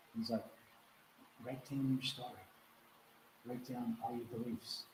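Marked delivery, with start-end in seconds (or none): 1.4-4.8 hushed, very soft, gentle voice. Retelling a teacher's instruction, imitating Miguel speaking softly. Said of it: "he used to speak very softly".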